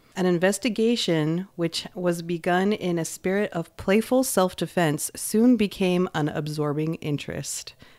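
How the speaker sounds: ordinary delivery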